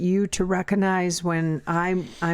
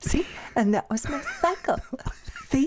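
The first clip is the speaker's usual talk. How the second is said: tender, condescending, light little voice pitched up; 9 semitones higher than usual. Mocking the other speaker by repeating their words back, in a little light voice. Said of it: "your little light voice".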